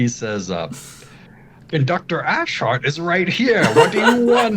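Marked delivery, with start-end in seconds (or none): 1.7-4.6 very high, shrill, furious, rising shout. Voicing an angry conductor who storms out: shouting angrily. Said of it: "he shouts at you".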